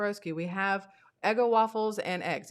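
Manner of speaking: ordinary talk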